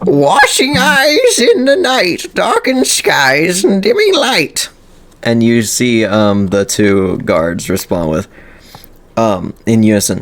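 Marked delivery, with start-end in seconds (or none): 0.0-4.7 very high, sing-song, swooping put-on character voice. Reading a character's lines aloud: put-on character voice. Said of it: "now I have to do this in his voice".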